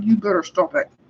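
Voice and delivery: mock, spoken through gritted, clenched teeth. A parent retelling warning their kids at the grocery store, through gritted teeth. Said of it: "I get like grit, gritted teeth".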